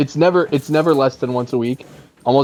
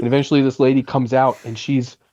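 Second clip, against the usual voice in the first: ordinary talk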